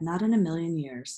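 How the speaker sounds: ordinary delivery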